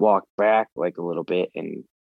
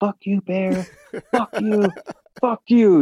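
put-on very high, loud, all-out screaming yell; 14 semitones higher, 5 dB louder than usual. Retelling a charging bear encounter, reenacting yelling at the bear. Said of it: "I'm just yelling".

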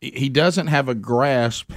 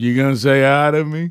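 small, creepy, unsettling voice; 3 dB louder than usual. Retelling how he opens his remarks: imitating a creepy greeting. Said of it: "the creepy way he starts it".

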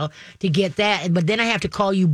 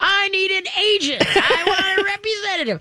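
very high-pitched screaming yell; 13 semitones higher than usual. Recounting demanding an agent, re-enacting her own screaming at him. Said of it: "And I'm screaming at him".

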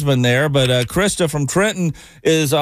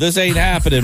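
usual speaking voice

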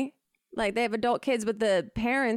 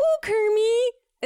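high, loud, belted cartoon pig puppet voice; 12 semitones higher, 6 dB louder than usual. Asked how Miss Piggy sounds, a speaker answers with a Miss Piggy impression. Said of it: "How's Miss Piggy sound?".

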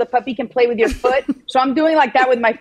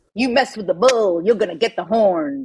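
fully committed put-on Southern drawl accent; 2 semitones lower than usual. Told to nail the accent, the speaker says the expression in a Southern drawl. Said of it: "you got to nail this accent".

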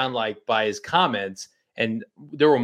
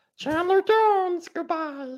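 very high character voice. Signing off a player's quote as Elmo: Elmo voice. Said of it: "Elmo says".

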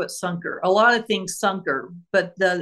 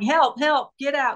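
put-on yell, much higher, slower; 5 semitones higher than usual. Retelling a call where a woman yelled while the dispatcher asked her address: retelling a woman yelling. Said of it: "She's just yelling".

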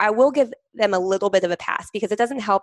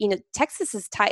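plain

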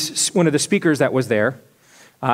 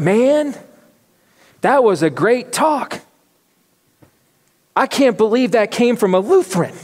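heavy Southern drawl, pitched up; 6 semitones higher than usual. Retelling what overheard men said after a talk: imitating a southern accent. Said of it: "clearly very Southern accents".

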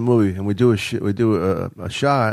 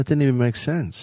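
hushed, soft whisper close to the ear; 4 semitones higher than usual. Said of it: "in a low wh-, wh-, whisper".

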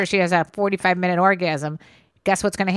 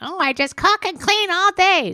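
put-on very high, put-upon old grandma voice; 12 semitones higher than usual.

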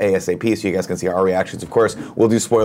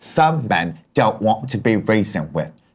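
put-on older English gentleman voice. Quoting a line from Dark Knight: Michael Caine impression. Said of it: "I do a tremendous Michael Caine".

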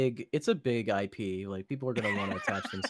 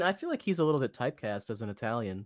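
ordinary talk

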